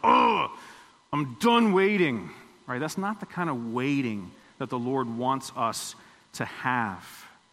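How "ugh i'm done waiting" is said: slow, disgusted, fed-up, impatient sigh. Speaker acts out someone tired of waiting, mock-disgusted. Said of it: "We don't wait with disgust in our heart".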